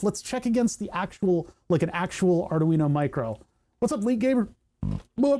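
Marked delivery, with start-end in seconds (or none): 3.8-5.4 speech interrupted by a burp. Speaker breaks off a hardware test to greet someone, burping mid-sentence. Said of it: "sorry, burping".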